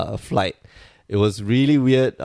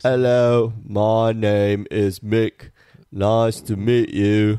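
slow, full, put-on Cockney accent. Podcast hosts joking around, introducing himself in a put-on Cockney accent. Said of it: "I feel like doing a full Cockney accent".

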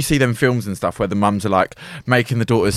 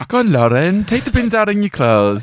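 very high-pitched Welsh accent; 10 semitones higher than usual. Asked how they sounded, the speaker performs the bit in a Welsh accent. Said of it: "You have to do it in a Welsh accent".

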